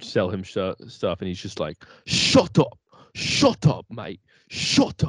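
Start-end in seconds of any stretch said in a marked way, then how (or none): 2.1-5.1 put-on very slow, pitched-up, belligerent drunk British man voice. Retelling a British guy telling sellers to shut up: imitating a belligerently drunk British guy. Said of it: "belligerently drunk".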